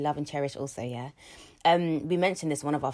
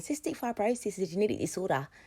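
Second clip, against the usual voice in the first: put-on Australian accent; 5 semitones higher, 3 dB quieter than usual. Speaker shows the only phrase they can say in an Australian accent. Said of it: "the only phrase that I can say in an Australian accent".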